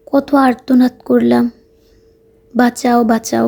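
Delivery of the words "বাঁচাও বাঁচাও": normal talking voice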